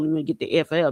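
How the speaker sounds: plain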